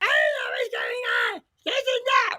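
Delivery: animated, high, up-and-down swooping shout. Showing viewers how Simon's real voice sounds: imitating Simon's voice. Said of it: "So he was like".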